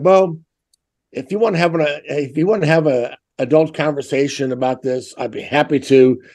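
normal talking voice

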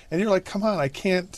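high, mock protesting tone.

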